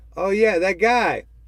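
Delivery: put-on bland, coy voice in a Canadian accent. Retelling a joke scene, imitating Norm Macdonald. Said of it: "He says it in that Canadian accent".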